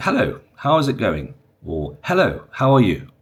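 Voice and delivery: clear, courteous Received Pronunciation accent. Teaching pronunciation, the speaker demonstrates a greeting in rp pronunciation. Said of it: "So in R P pronunciation".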